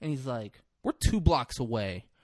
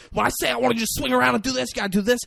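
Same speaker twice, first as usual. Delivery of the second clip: put-on screaming, manic man voice, higher and louder; 10 semitones higher, 5 dB louder than usual. Retelling a locker room scene, imitating Martin Sheen screaming at everybody. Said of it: "He's screaming at everybody".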